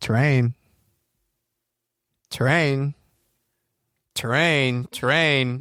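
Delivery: mechanical, automated robot-style voice. Echoing an aircraft terrain warning, in a robot voice. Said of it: "in the robot voice".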